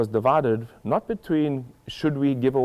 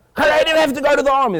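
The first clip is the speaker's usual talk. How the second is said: loud shouting, getting higher and louder; 7 dB louder than usual. Retelling how the man kept shouting louder: imitating a man getting louder. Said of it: "the guy just gets louder".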